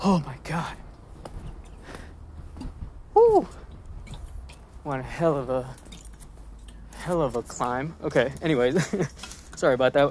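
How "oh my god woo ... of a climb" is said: out of breath, winded, slower. Climbing stairs mid-commentary on market sectors, out of breath. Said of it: "so I probably sound out of breath".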